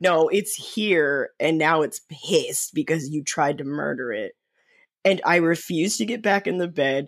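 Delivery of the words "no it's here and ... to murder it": ordinary talk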